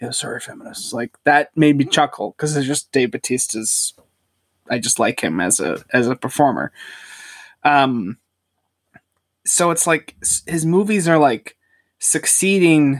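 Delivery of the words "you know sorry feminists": very quiet, breathy, near-whispered throwaway mutter. Praising a film performance, acting out a line the way Dave Bautista mutters it. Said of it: "he just sort of mutters".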